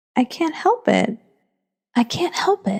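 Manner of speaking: very meek, timid. Reading Alice's reply to the Dormouse, very meekly. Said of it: "said Alice very meekly".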